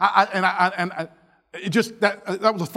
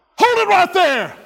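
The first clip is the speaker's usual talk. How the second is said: shrill, very high, loud acted-out yell; 11 semitones higher, 6 dB louder than usual. Telling a story of coming up behind someone, retelling a yell. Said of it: "and I just yelled".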